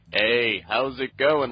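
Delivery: slow, drawling tough guy voice. Describing a voice actor's newer Piccolo voice: Chris Sabat tough guy voice. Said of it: "this tough guy voice sound".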